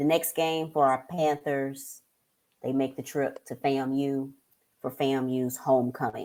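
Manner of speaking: low, soft, unexcited, unenthusiastic read.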